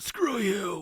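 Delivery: choked-out words, high-pitched and loud. Narrator voices a pinned-down man answering a threat: choking out the words. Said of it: "He chokes out".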